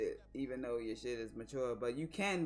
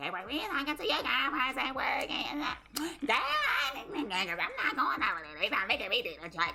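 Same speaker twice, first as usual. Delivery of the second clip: loud, very high, big projected everyday voice; 13 semitones higher, 8 dB louder than usual. Showing the other speaker how she should project: imitating wife's loud talking voice. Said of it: "project your voice like you're talking, like how you talk".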